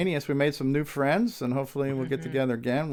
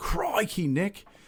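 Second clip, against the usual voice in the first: put-on Australian accent, pitched up; 5 semitones higher than usual. Thanking a listener in Australia, impression of an Australian accent. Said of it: "that impression of an Australian accent".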